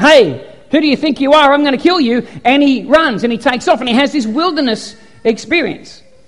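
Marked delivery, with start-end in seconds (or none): 0.0-2.3 play-acted indignant, angry, menacing tone, all in a huff. Retelling Jezebel's reply to Elijah: imitating Jezebel angrily threatening. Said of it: "gets her knickers in a knot and goes".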